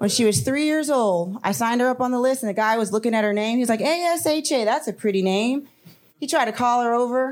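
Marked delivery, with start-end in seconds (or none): none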